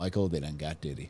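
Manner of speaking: choked-up, tearful voice, catching, close to tears. Repeating the caller's words again, imitating Jake choked up. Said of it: "He's getting all choked up again".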